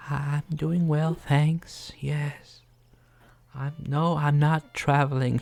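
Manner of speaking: small, whispered voice. A narrator voicing a small bird character answering questions, tiny whispering voice. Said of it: "you hear a tiny, tiny voice from come out of her beak, just like a little whispering".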